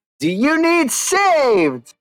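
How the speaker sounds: very high, slow yell, "saved" stretched out. Playing a character who ignores someone and yells across to another: yelling across in character. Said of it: "I'm gonna yell across to this one".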